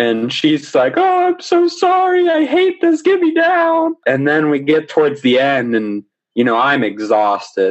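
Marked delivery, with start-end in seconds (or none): 1.0-4.0 put-on very high-pitched scream. Speaker retelling a woman screaming in his ear, imitating her screaming. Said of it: "she's screaming in my ear".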